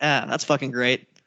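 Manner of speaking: usual speaking voice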